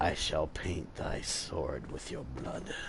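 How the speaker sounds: dark, raspy, breathy whisper. Trying out a voice for the character Tenebris: dark, raspy Tenebris voice. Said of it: "I might give him like a nice, uh, dark, raspy voice".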